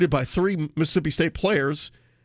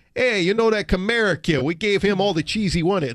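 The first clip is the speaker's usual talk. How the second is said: put-on Wisconsin accent, higher pitch; 3 semitones higher than usual. Joking that a name makes someone sound like he's from Wisconsin, use a put-on Wisconsin accent. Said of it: "makes me feel like he's from Wisconsin".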